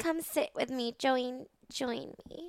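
mock slurred drunk speech. Retelling how a stumbling woman called a stranger over: imitating her slurred drunk talk. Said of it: "she talked like this".

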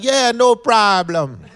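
very high, loud, casual put-on improper accent. Retelling how he talked on walking in, to seem cool, not speaking proper. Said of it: "so I never spoke proper when I walked in there".

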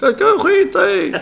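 shrill, creaky, rough, high, drawn-out angry scream. Recounting what he screamed when he was mad at her, retelling his scream. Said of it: "skrek han ju".

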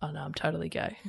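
soft, whispered, light, flippant tossed-off delivery.

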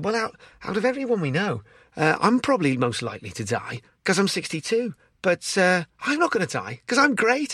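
bad gentle Scouse accent. Quoting a man they know; terrible scouse accent impression. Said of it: "apologies for this terrible accent".

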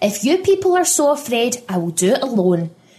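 spitting the words. Pippa answers the warning about taking Abby back, spat out. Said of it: "spat Pippa".

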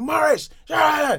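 very high, shrill, raspy, rough shout. Retelling how a mother shouted at a brother: imitating a mother shouting. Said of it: "my mum would shout at him".

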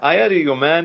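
put-on laid-on-thick South American accent. Praising the main gangster's accent, the speaker quotes him: exaggerated South American accent. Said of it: "how South American his accent is".

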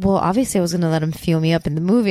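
flat, fast, low deadpan delivery. Quoting a man's reply after being told to treat someone, retelling a deadpan remark. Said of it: "he said it so deadpan".

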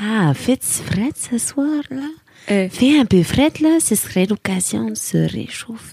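sexy, sultry, put-on Québécois-accented voice. Asked for a sexy voice with a Québécois accent, the speaker does one. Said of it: "Fais-nous une voix sexy avec l'accent québécois".

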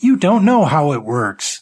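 shouting. The narrator argues while telemarketers listen, shouting. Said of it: "Now I was shouting".

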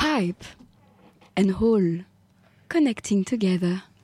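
French-sounding voice. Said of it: "French it up".

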